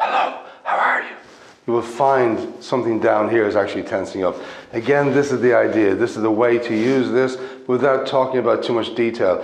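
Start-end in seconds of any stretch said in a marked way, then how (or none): 0.0-1.2 loud, strong stage whisper, fully whispered. Showing how to say a line to feel breath support: loud whisper. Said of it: "if you just say something in a loud whisper".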